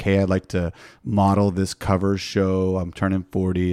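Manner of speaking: ordinary delivery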